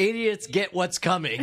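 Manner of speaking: ordinary talk, nothing marked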